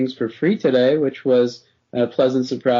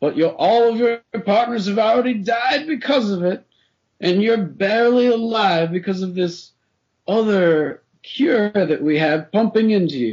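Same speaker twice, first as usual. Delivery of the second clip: dramatic, theatrical voice, higher pitch; 8 semitones higher than usual. Explaining a game's premise to the listener, in a dramatic voice. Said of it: "So dramatic, I loved it".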